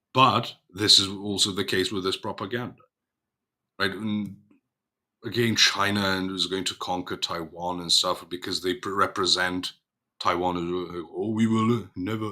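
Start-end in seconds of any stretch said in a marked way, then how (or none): 11.2-12.4 put-on Japanese-accented English. Speaker voices how propaganda portrays Taiwan, put-on Japanese accent. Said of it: "why am I doing a Japanese accent?".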